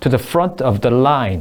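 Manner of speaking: front and line hit hard, rest quick. Teaching English phrase rhythm: stress on front and line. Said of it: "이런 데에 강세가 있어요. Front line".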